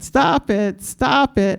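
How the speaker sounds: put-on New York accent, very slow and stretched out. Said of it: "then his New York accent".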